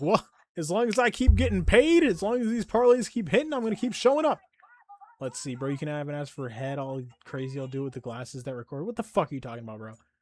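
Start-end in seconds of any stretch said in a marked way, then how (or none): 0.0-4.4 very high, loud caricature voice. Imitating a regular greeting the girls: imitating Eustace. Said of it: "And he's like".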